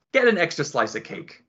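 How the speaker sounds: ordinary talk, nothing marked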